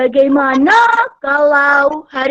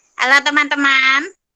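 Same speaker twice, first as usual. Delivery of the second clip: thin, tinny put-on voice. Asked to try it, [name] greets her friends in a shrill, squeaky voice. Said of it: "Sudah berhasil kamu suara cemprengmu".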